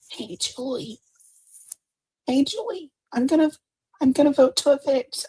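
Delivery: tiny, very high, soft mousy squeak. Imitating a forgettable woman announcing her vote to Julie, do Lauren sounding like a mouse. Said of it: "she even sounds like a mouse".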